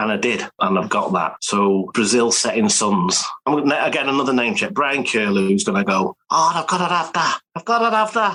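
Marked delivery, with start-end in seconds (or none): 6.3-8.3 put-on high-pitched Scouse accent. Act out what Brian Curlew, obsessed by Setting Suns, is going to say, in a Scouse accent. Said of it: "That's my Scouse accent for you".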